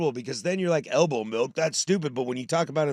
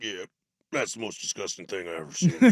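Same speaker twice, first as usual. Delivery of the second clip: low-pitched dad voice; 8 semitones lower than usual. Retelling a friend's dad's verdict after watching a video: imitating a friend's dad. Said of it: "He kinda talked like this".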